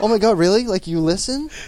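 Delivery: high, loud, giddy, starstruck gushing voice.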